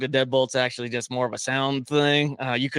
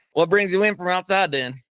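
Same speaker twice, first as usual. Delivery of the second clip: put-on Louisiana accent, high-pitched; 6 semitones higher, 3 dB louder than usual. Speaker starts an improvised scene with the other speaker: Louisiana accent. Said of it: "I could try to do a Louisiana accent".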